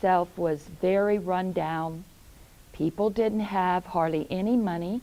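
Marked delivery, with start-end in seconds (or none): none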